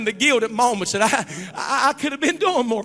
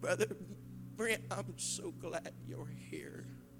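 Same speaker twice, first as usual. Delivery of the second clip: put-on weary, broken woman's voice, lower, quieter; 7 semitones lower, 22 dB quieter than usual. Retelling how a woman greeted him after a decade, imitating Mary Williams's weary voice. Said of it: "Mary Williams with her weary voice. It was broken".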